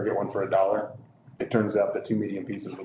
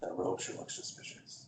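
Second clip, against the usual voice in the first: very quiet, hushed, barely voiced whisper; 2 semitones lower, 13 dB quieter than usual. Player in character whispers to one of the guards, whispering. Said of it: "I'm just gonna whisper to him".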